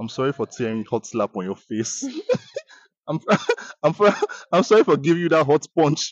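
usual speaking voice

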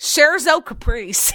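loud, fully Americanized pronunciation and accent. Saying a music track title with a complete american accent. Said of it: "If I were to say it with a complete American accent".

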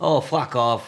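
loud put-on Scottish accent. Asked how to tell trick-or-treaters off, answering in a Scottish accent. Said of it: "in a Scottish accent".

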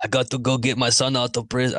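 bad put-on Austrian action-star voice. Retrying after a laugh: terrible Arnold impression. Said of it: "That was a terrible Arnold impression".

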